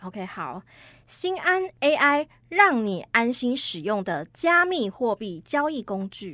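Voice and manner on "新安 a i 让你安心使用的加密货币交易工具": punchy, loud, slow, forceful reading. Reading a client's slogan from a script: more forceful delivery. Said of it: "我觉得你讲的这句是比较有力道一点的".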